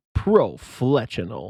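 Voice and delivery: booming voice, every syllable stretched. Saying a fragment name from the game the way the Halo announcer would. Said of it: "you could say it like the Halo announcer".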